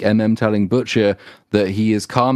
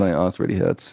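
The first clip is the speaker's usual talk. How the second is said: acted-out mock whisper, much lower in pitch; 2 semitones lower, 4 dB quieter than usual. Retelling a character's final words to friends, acting out a whisper. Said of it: "and then he whispers".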